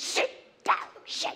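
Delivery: put-on hushed shout. Speaker recalling jumping around the living room at 3 a.m., retelling a quiet shout. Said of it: "Do you ever shout quietly?".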